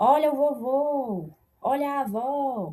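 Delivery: slow, loud stress on final syllables of vovô, avó. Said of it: "vou puxar mais pra última sílaba".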